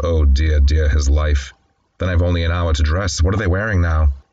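ordinary delivery

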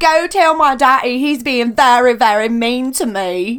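loud, put-on British accent, a bit cockney. Asked to do an accent, the speaker says the line in a British accent. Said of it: "do an accent for me".

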